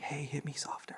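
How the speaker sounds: very quiet, hushed whisper. Retelling play-fighting with a brother while trying to stay quiet: imitating speaking really quietly. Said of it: "we would try to be really quiet".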